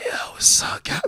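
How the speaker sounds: mock raspy, hoarse mob boss voice. Retelling a friend's greeting, imitating a hoarse mob boss voice. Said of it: "one of them old mob boss that had his throat slit and he survived".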